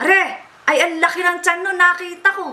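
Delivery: very high-pitched Baler-style Tagalog accent. Contrasting regional accents, showing how people in Baler talk: Baler Tagalog accent. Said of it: "Ganon yung Baler".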